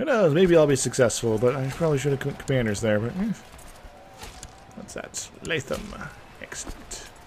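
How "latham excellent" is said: slow, hushed, soft whisper. Player thinking aloud while planning moves in a game; Star Wars Emperor voice. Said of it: "starting to talk like the Emperor from, you know, Star Wars".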